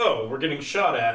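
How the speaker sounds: plain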